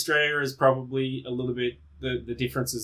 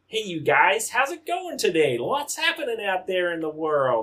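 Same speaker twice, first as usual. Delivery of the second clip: clumsy fake American accent, high and swooping; 6 semitones higher, 3 dB louder than usual. Asked to say a word in an american accent: bad american accent. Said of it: "my American accent is so bad".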